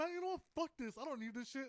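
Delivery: put-on fed-up anger. Speaker retells walking out after being yelled over, retelling being fed up. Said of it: "I was already riled up".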